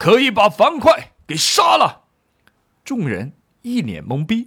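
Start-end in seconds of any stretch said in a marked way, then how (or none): 0.0-2.0 high-pitched, loud, angry scolding shout. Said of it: "怒斥道".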